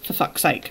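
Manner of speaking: breathy mutter under the breath. Retelling a remark made to the driver bringing the shopping: imitating a mutter. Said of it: "And then I muttered".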